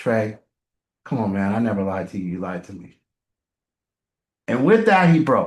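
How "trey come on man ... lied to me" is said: low, soft, very calm talk. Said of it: "very calmly".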